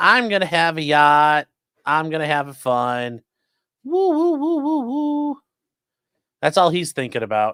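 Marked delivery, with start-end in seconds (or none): 0.0-5.4 put-on gleeful voice. Mocking the attorney dreaming of a yacht: imitating the attorney, gleeful. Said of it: "He's like".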